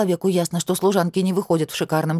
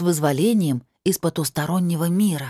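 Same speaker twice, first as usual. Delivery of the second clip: usual speaking voice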